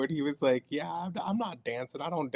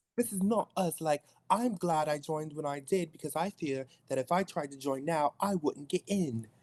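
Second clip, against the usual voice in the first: put-on British accent, higher; 3 semitones higher than usual. Quoting a movie character's monologue after being asked: Lily in a British accent. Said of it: "Lily monologue in your British accent".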